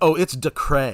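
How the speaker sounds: put-on New Orleans French Quarter accent. Suggesting how the other speaker could say a name, in a French Quarter accent. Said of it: "like being from the French Quarter".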